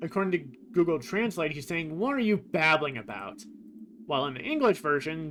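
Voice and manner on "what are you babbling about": plain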